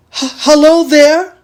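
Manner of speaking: shaky, trembling voice. A narrator reads a man's call to someone climbing toward him: shaky voice. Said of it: "he called with a shaky voice".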